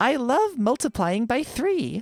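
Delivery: very high, slow text-to-speech voice. Asked to do the TikTok voice, the speaker reads a line in the TikTok text-to-speech voice. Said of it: "Please read down the TikTok voice".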